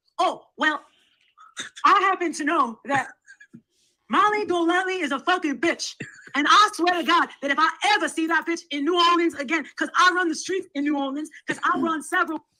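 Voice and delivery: put-on female voice. Asked to now do the other one for the group, imitating Alicia. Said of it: "You sound nothing like Alicia".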